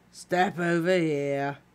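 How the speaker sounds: bored, uninterested, offhand, routine delivery. Narrator reads a security wizard addressing an escorted visitor, bored voice. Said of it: "said the wizard in a bored voice".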